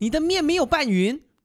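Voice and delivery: piercing, very loud, high-pitched shout. Retelling a visit to a shop, imitating the boss lady speaking very loudly. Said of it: "然后他讲超大声".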